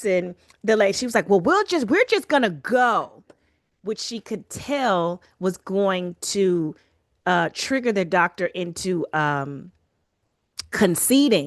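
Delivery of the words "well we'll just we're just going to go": louder, higher raised voice. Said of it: "she raises her voice".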